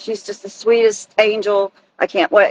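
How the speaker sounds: ordinary delivery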